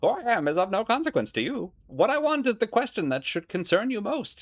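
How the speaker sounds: very high, swooping villain voice. Voicing the villain behind the Walking Dead, in a Skeletor voice. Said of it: "going for the most like Skeletor voice".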